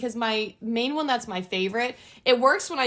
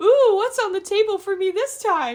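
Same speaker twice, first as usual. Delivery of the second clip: very high, squeaky, loud put-on cat voice; 10 semitones higher, 5 dB louder than usual. Voicing the ginger cat who joins her videos: put-on voice for her cat. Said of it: "that's his voice".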